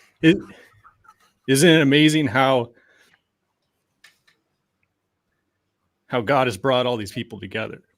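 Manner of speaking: choked-up, emotional voice catching. Recounting what a woman kept saying to her: choked up. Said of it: "I'm gonna get, like, choked up here".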